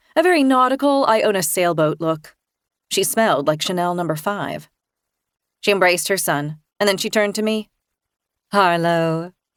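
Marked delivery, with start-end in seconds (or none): 8.5-9.3 throaty public radio announcer voice, lower pitch. Reading a greeting from the story: throaty NPR voice. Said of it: "in her throaty N P R voice".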